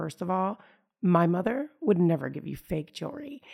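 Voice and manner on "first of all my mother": plain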